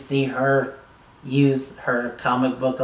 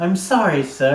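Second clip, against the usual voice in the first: put-on English accent, pitched up; 5 semitones higher, 4 dB louder than usual. Retelling a scene, the speaker voices a servant apologizing to him: british accent. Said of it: "She's got a British accent to her".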